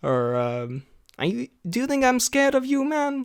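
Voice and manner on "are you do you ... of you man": very high, challenging fighter voice. Recalling a fighter's distinct voice from his clips: G S P impression. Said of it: "a pretty good G S P impression".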